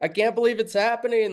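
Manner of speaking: imitated scream. Retelling hanging up the phone after hearing the sponsorship news: imitating own past scream.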